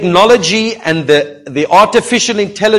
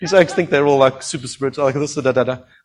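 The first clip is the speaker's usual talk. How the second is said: ordinary talk, nothing marked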